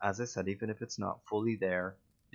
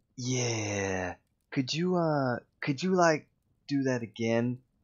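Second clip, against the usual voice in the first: terrible, hedging, raised, halting voice, long yeah; 4 semitones higher, 5 dB louder than usual. Imitating a director asking for another take: terrible impression of Mac. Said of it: "that was a terrible impression".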